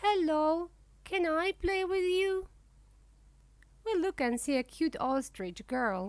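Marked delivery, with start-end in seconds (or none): 0.0-2.5 tiny, small, high little voice. Narrating a story, a cute ostrich girl speaks up unseen: small voice. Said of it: "we can hear a small voice".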